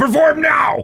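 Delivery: fake shouting. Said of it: "to be like".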